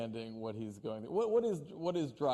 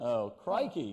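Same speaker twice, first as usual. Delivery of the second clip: clumsy, bad, fake Australian accent. Challenged to try an australian accent, attempting one: bad australian accent. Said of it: "you try to do an Australian accent".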